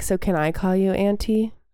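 plain

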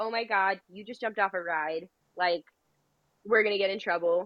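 ordinary delivery

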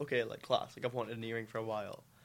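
plain

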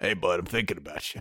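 low, soft put-on cartoon alley cat voice. Wrapping up, picturing a man in a garbage can with a fish skeleton: cartoon cat voice. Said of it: "like a cartoon cat going".

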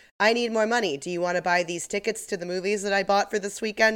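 plain

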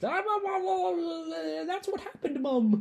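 put-on very high, very slow, hysterical thick British accent. Retelling a line from a film scene: imitating a hysterical maid with thick british accent. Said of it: "She has such a thick British accent, and she's so hysterical".

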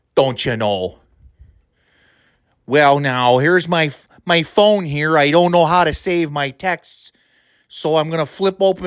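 mocking put-on Wisconsin Midwestern accent. Mocking a judge during a rant: mocking Wisconsin Midwestern accent. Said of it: "that stupid goddamn Wisconsin Midwestern fucking horseshit accent".

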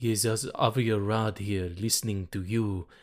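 put-on sexy producer voice. Imitating a film producer answering a call to Sony: sexy Avi Arad impression. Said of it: "that's a bit sexy for Avi".

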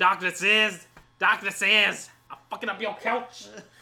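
wild, very loud hollered outburst at full volume. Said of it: "[name] in that [name] skit".

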